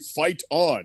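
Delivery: mock robotic AI voice. Mocking a co-host's first promo read of the line: imitating a robotic read. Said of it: "it was very robotic".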